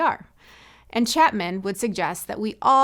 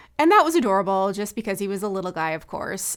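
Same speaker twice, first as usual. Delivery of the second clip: usual speaking voice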